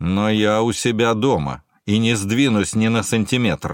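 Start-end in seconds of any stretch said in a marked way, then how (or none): none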